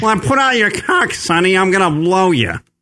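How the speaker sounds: high-pitched, quacky, duck-like comedy voice. Imagining how a woman would talk, in a Fran Drescher-ish duck voice. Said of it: "Fran Drescher-ish?".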